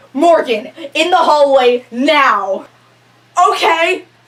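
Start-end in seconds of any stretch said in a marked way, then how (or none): 0.2-2.7 furious man's angry shout, drawn-out. Retelling how a man stormed out of a room at the speaker, imitating Mr. Winowski storming angrily. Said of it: "storming out of the room towards me going".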